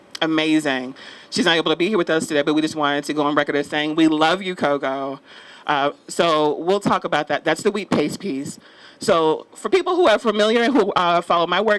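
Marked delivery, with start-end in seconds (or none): none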